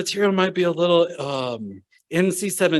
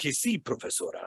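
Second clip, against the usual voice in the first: very quiet, really deep, whispered Spanish; 2 semitones lower, 11 dB quieter than usual. Retelling own answer to a teacher in spanish, imitating a really deep voice. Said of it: "spoke Spanish with this really deep voice".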